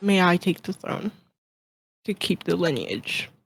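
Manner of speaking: hushed, soft whisper in character. Voicing a character speaking into the king's ear: whispering in character. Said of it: "he's gonna whisper".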